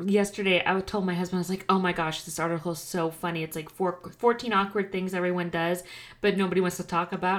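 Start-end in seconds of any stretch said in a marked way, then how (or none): none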